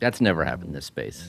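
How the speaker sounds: thick sarcasm. Replying to a remark about paid reviews: thick sarcasm. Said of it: "the sarcasm is thick".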